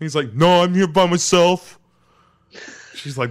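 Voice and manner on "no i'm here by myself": loud, belted, high-pitched dumb, dopey voice. Retelling a scene with Laura Palmer, speaker voices him answering her: dumb James voice. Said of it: "my stupid, dumb James voice".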